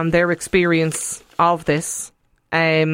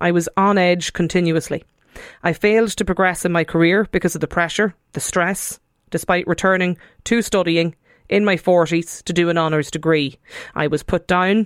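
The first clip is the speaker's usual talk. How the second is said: ordinary talk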